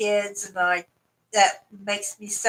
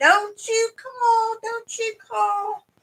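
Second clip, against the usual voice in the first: very high, drawn-out, tearful crying scream; 14 semitones higher than usual. Retelling what was yelled during a fall: imitating crying and screaming. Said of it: "I was crying and screaming at her".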